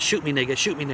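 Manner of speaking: plain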